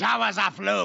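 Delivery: odd, creaky impression voice.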